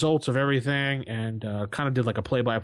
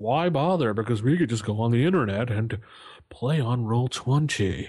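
put-on haughty, snooty snob voice. A host voices most people's view of play by post in a put-on snob voice. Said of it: "that was my snob voice".

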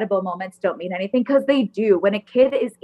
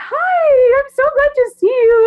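very high, very slow, loud, drawn-out kindergarten voice; 7 dB louder than usual. Retelling how a visiting aide greeted an eighth-grade student, in a little kindergarten voice. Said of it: "like this little kindergarten voice".

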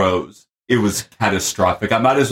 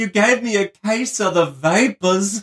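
terrible put-on Southern accent, very high pitched; 11 semitones higher than usual. Talking about how people in Texas speak, doing a terrible Southern accent impression. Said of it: "My impersonation was terrible".

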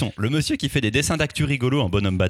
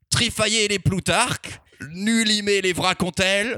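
high-pitched, put-on sea-dog pirate accent; 7 semitones higher than usual. Introducing an album to listeners, pirate accent. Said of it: "je continue avec l'accent de pirate".

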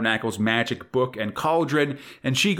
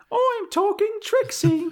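bad English accent, pitched very high. Urged by another speaker to try it with an English accent: bad English accent as Trixie. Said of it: "especially like UK listeners. I'm sorry".

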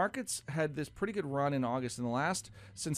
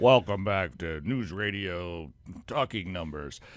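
very low, deep, booming talk-radio announcer voice; 8 semitones lower, 5 dB louder than usual. On a radio show, mocking the announcer guy for a co-host, in a radio announcer voice. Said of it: "the voice of the announcer guy".

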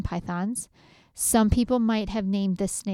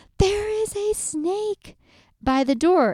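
panicked screaming, higher and louder; 11 semitones higher, 4 dB louder than usual. Retelling standing on a wall after seeing a snake: imitating her own panicked screaming. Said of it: "I jump onto the wall and I'm screaming".

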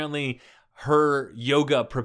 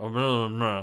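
put-on mumbly, low Scottish accent. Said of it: "'Cause he was like".

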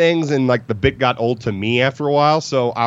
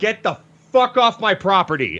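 mock incensed, enraged shout, high and furious; 6 semitones higher than usual. Retelling ordering people off the property in pajamas: imitating own furious yelling. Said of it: "I was so incensed".

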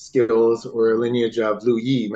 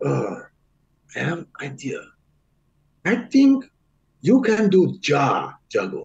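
put-on Chinese-accented English with swooping, sing-song tune; 4 semitones higher than usual. The speaker retells what a man once told them, imitating a Chinese accent. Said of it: "Excuse the accent".

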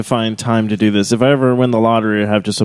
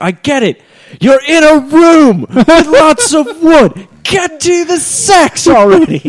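loud, very high, very slow put-on English accent; 6 dB louder than usual. Retelling what a girl online said about a book: imitating an english accent. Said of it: "a girl online who's, uh, English".

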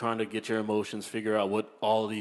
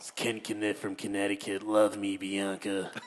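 deliberately creepy put-on voice. Doing his go-to voice for sounding creepy, creepy Ken Kinnett voice. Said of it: "every time I want to make a creepy voice, I do the Ken Kinnett voice".

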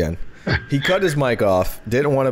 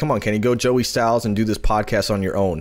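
usual speaking voice

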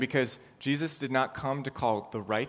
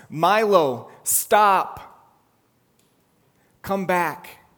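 mock very loud, loving yet firm call; 6 semitones higher, 12 dB louder than usual. A speaker retelling how he calls back one who runs off, retelling a loving yet firm call. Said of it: "I say in a loving and yet firm voice".

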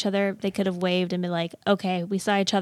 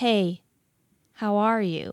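put-on awkward tone. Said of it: "if you're gonna talk like that".

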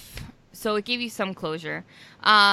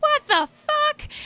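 put-on shrill, very high, angry outburst.

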